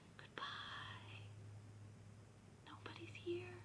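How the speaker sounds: soft, quiet, hushed, under the breath. In a rhyme, saying goodbye as quiet as we can: quiet goodbye. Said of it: "as quiet as we can".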